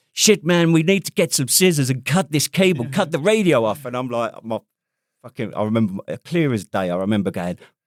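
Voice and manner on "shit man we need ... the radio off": put-on American accent, pitched up. British soldier retelling what an American said when his radio got caught, American accent. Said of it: "this American accent going".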